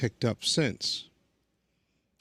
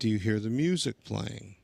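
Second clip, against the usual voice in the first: plain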